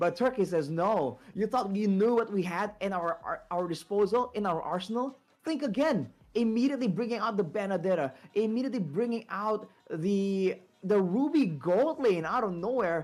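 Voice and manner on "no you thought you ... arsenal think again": usual speaking voice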